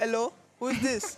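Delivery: put-on heavily laid-on, thick Mexican accent. Retelling the truck seller answering his phone call, in a thick Mexican accent. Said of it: "thick Mexican accent".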